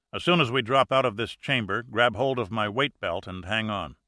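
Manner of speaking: plain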